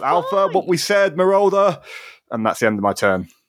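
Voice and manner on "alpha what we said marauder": drawn-out, slow, very high shout. Voicing a character calling out to an ally: in-character shout. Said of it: "to shout".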